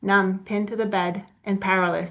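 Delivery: ordinary delivery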